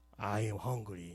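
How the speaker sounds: put-on hungry voice. Telling an audience what was said after reaching the semifinals, use a put-on very hungry voice. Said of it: "되게 배고픈 목소리로".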